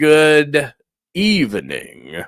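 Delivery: swooping vampire voice, "good" drawn out long. Greeting the people present one by one, in a vampire-like voice. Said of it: "I sound like a vampire".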